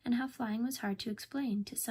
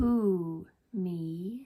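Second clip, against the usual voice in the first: big, deep, loud dragon voice; 7 dB louder than usual. Reading a story, a voice answers Owl's calls: deep dragon voice. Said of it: "said a deep voice".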